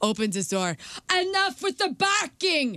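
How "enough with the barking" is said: put-on Finnish accent, higher pitch. Retelling a neighbor from Finland yelling at a barking dog: imitating a Finnish neighbor's accent. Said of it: "we loved his accent".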